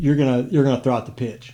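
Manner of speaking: ordinary talk, nothing marked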